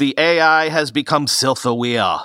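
slow, put-on Austrian accent. Show host summarizing weekend headlines about AI, in an Arnold Schwarzenegger Austrian accent. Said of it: "in my attempt at an Arnold Schwarzenegger impression".

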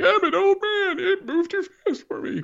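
put-on bad, very high old-man voice. Joking about not wanting to sound old: horrible Grandpa Simpson voice. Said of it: "my horrible Grandpa Simpson thing".

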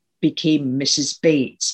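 ordinary delivery

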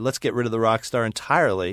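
ordinary delivery

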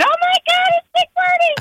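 high, excited fan squeal.

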